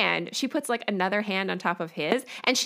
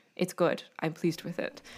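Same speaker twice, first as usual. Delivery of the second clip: breathy, hushed, grave, solemn, serious, somber voice; 4 semitones lower, 7 dB quieter than usual. Retelling how Steven reacted on the show: imitating Steven's serious somber voice. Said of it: "serious summer voice being like".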